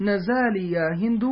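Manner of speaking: ordinary talk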